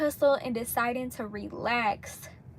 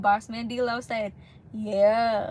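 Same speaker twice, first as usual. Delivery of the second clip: ordinary talk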